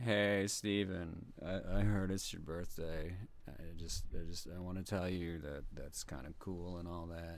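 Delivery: very low, hushed, dead-flat bored monotone. Told to do the most monotone bored voice possible, speaking to Steven. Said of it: "Do the most monotone board voice possible".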